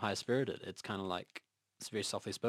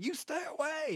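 wild, raging, very high-pitched voice. Acting out a film scene where he points a sword at people: imitating Mel Gibson raging. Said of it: "only the way that Mel Gibson does".

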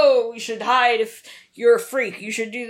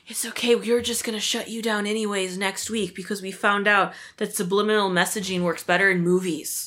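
put-on whisper, quieter; 2 semitones lower, 3 dB quieter than usual. Acting out what a man whispers after an arrest, imitating someone whispering. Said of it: "he whispers like".

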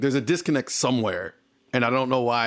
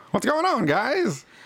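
put-on old-timey 1940s accent, much higher pitch; 12 semitones higher than usual. Imagining walking into work and greeting coworkers, 1940s accent. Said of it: "with a 1940s accent".

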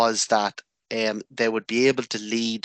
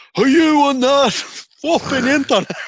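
very high, shrill, very loud bellow; 9 dB louder than usual. Speaker recalls their dad calling down the hall, imitating him bellowing. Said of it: "all you'd hear down the hall bellowing".

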